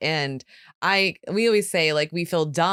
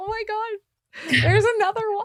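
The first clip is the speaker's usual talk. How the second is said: put-on tearful voice, higher. Retelling own reaction to people sending messages: imitating own past crying. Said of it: "I was in tears".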